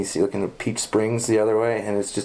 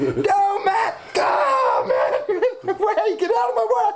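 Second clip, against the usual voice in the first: high, laughing scream throughout. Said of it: "screaming the whole way".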